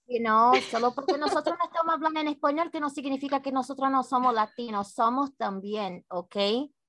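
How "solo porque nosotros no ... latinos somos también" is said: very fast, rushed, rapid-fire Spanish. Switching to Spanish to show the audience they speak it, very fast. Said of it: "that was way too fast".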